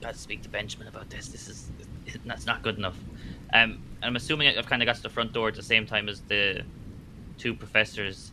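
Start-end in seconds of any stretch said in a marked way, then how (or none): 0.0-3.0 hushed, whispered grumble muttered under breath. Role-playing a character hit by icy rain from a leaky roof, muttering a curse under breath. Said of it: "Just kind of mutter under a bit and curse".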